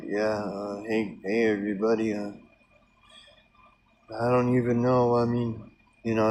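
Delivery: heavy, sorrowful, somber tone. Speaker imitates a guy's somber video with many views, mock somber tone. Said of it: "There's a real somber tone".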